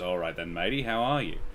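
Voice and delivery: put-on pirate voice, dropped very low and hushed. Retelling what she said after being told to knock it off; pirate voice, pitch dropped. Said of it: "her real voice is more the pirate; the voice drops down half an octave".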